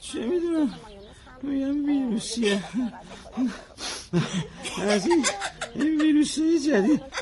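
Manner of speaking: fake sick voice with laughs slipping in.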